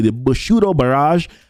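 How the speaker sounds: spoken in a Spanish accent. Reading out an ability's name: Spanish accent. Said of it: "I said that with a, with a Spanish accent".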